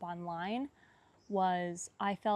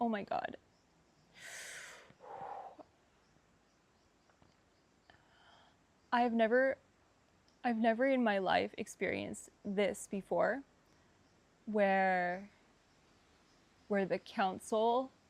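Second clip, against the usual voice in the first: tearful, close to crying. Recounting a meeting with a council of guides by a river, about to cry. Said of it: "I'm gonna cry".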